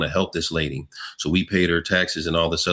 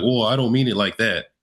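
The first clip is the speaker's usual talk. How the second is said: flustered, frantic, pitched-up, acted tone; 5 semitones higher than usual. Retelling a cop's answer after being challenged: imitating a frantic cop. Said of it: "he got all frantic".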